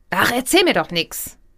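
defiant, pressed, overdriven, squeezed-out voice. Demonstrating the rebellious child ego state: defiant, pressed, overdriven voice. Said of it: "Rebellisches Kind, ich ist total trotzig... es ist auch gepresst, so ein bisschen übersteuert".

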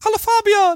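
very high, cute little voice. Greeting Fabian at the start of the talk, in a Kirby voice. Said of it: "die Stimme von Kirby nachmachen".

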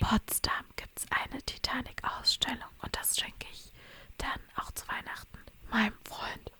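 very quiet, hushed whisper. Speaker tells about a Christmas gift for her boyfriend, whispering. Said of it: "jetzt muss ich flüstern".

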